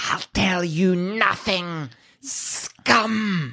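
snakelike hiss of pain. Narrating a tabletop scene, voicing a woman whose skin is melting, hissing in pain. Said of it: "she also hisses in pain, like a snake might".

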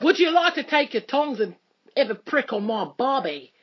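put-on Australian accent all the way through. Continuing a friend's bit, in an australian accent. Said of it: "Don't you like my Australian accent?".

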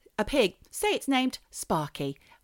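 usual speaking voice

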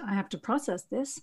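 quietly spoken. Retelling a devastated child's reply to his mother, as a quiet remark. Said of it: "he just quietly went".

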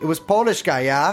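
put-on German accent slipping in. Reading an interview answer about a polish property manager: put-on german accent. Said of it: "That's German, sorry".

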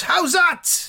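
mock very high, loud shout. Telling how Jimmy Slade catches the ball: imitating a shout. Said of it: "Slade catches it and shouts".

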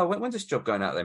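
normal talking voice

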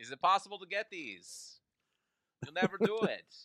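high-pitched mock professor voice. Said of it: "That's my Skarsgård accent".

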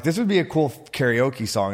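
usual speaking voice

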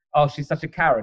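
ordinary delivery

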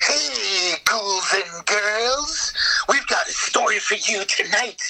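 cackling, wailing horror-host voice. Describing a 90s HBO horror show, the speaker mimics its puppet host in Crypt Keeper voice. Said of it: "the Crypt Keeper kind of".

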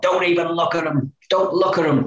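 high, all-out shout at the top of the lungs. Retell lining up in the tunnel with the others beside you, imitating Joey shouting. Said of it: "he'd be shouting at the top".

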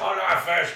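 high, loud, slow orc voice.

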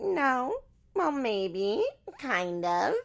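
put-on terrible very slow, high, swooping baby talk. Retelling a reply about being together, in a terrible baby voice. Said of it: "in her terrible baby voice".

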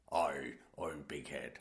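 terrible fake Scottish accent. Reading about Malcolm, one host calls him old big head in a bad Scottish accent. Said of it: "that was supposed to be a Scottish that accent".

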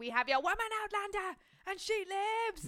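shrill, high hollering that climbs to the end. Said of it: "is just shouting".

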